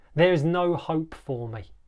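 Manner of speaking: ordinary delivery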